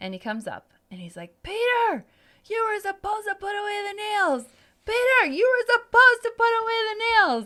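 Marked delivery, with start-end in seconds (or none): 1.4-7.5 shrill, high-pitched hollering, said twice over. Retelling Andrew yelling at him from the top of the stairs, retelling a yell. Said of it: "yelling at the top of the stairs".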